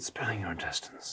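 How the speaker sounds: hushed, breathy, near-silent whisper. Speaker repeats a film line the way it is delivered: whispering. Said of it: "they like kind of whisper it".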